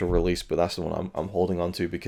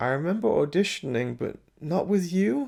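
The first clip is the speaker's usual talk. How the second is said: condescending put-down tone. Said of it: "such a, like, put down, condescending thing".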